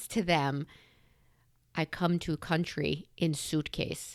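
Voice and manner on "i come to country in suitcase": put-on Russian accent. Retelling what a woman told the kids at the table, in a russian accent. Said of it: "she's just had a Russian accent".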